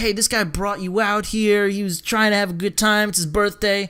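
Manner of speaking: usual speaking voice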